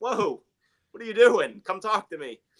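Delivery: high, loud voice sounding suddenly surprised.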